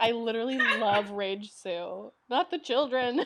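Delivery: normal talking voice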